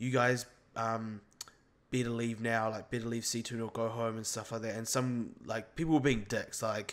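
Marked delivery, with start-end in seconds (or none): none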